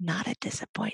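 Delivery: hushed, soft stage whisper. Retelling how he leaned in for the punchline: imitating a whisper. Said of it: "He leans in and whispers again".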